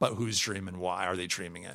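low, soft, quiet delivery.

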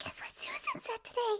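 hushed, breathy whispered voice. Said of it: "I have to say it like him".

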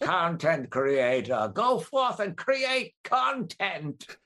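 put-on very high, grand, classic old-movie villain voice. Joining another speaker's improvised bit, in an old movie villain voice. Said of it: "it sounds like a villain in an old movie".

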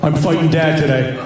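grave, very low, dead-serious voice. Retelling a brother walking in to announce a fight: imitating someone super serious. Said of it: "he walks into the room super serious".

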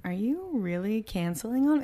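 mock playfully flirtatious, teasing voice. Retelling how a date asked about canceling: imitating a flirty question. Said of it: "in a flirty way".

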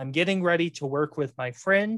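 play-acted delivery thick with sarcasm. Retelling what someone said about a coworker: retelling a very sarcastic tone. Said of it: "in a very sarcastic tone".

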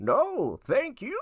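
tiny, small, squeaky character voice, pitched way up. Doing an impression of the Gnome Knight after being asked. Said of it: "the first one is the Gnome Knight".

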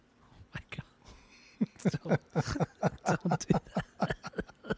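very drawn-out, slow, breathy whispery words through laughter. Reacting to another speaker's dark joke: laughing while talking. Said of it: "Why are you laughing?".

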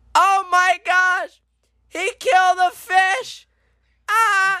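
very high, slow, long-drawn yelling. Retelling how the people behind reacted to the stepped-on fish: imitating someone yelling. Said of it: "they yell".

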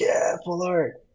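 put-on high, pumped-up, thrilled kid cheer. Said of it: "but he's so pumped".

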